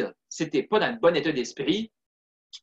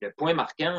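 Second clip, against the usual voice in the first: plain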